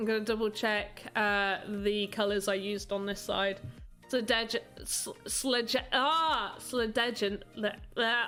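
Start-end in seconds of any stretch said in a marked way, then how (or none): 4.1-8.3 tongue-tied, chopped false starts stumbling on sledge. Trying and failing to pronounce a hard name: stumbling over a word. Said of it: "I can't say it".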